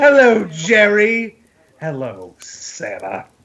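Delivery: strained put-on sitcom character voice. Joking about a Seinfeld Christmas crossover: Newman voice. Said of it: "that's gotta be destroying your voice".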